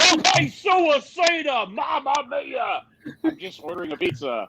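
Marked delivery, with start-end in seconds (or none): 0.0-2.8 very slow, stretched-out, drawn-out speech. Imagining Mauro Ranallo ordering a pizza: Mauro Ranallo voice. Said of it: "I want Mauro Ranallo as a customer service member".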